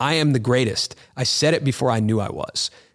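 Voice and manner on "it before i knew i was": normal talking voice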